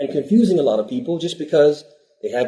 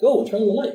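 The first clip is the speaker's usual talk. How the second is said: put-on, high-pitched shouting voice; 8 semitones higher than usual. Acting out a hypothetical scene at home: shouting at a newborn. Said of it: "I start shouting at the newborn".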